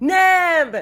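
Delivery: very loud, high, drawn-out shriek. Playing a character who sees a companion go down: screaming a name. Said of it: "she screams".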